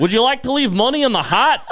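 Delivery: very high, shrill, put-on Scottish accent. Retelling what someone in Dundee said to him: Scottish accent. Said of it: "Did you do that accent".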